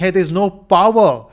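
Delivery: play-acted loud, alarmed shouting. Voicing the backup power units during a power failure: imitating a shout. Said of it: "they all start shouting".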